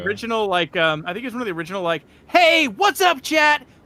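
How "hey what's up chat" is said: loud, pitched-up influencer voice, very drawn out. Imitating a generic kids' Minecraft influencer opening a video: generic kids' Minecraft influencer voice. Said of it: "the very generic, like, influencer, Minecrafter voice guy for kids".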